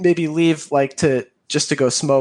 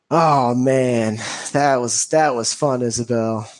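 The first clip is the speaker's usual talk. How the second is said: put-on wasted, drunk-sounding voice. Voicing a drunk character thanking isabel after a night out: drunk character voice. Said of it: "he's wasted".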